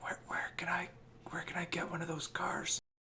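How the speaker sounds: very quiet, hushed whisper. A player's character approaches a guard, speaking in a hushed voice. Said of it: "I say in kind of a hushed voice".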